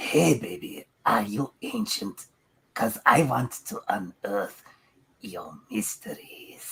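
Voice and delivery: gross, creepy, disgusting voice. Reading a pickup line on request: disgusting voice. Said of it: "say this in your most disgusting voice possible".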